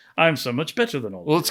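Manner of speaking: put-on campy old-time TV voice and cadence. Showing how the character Napoleon Solo talks: Napoleon Solo voice. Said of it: "doing kinda his version of Napoleon Solo".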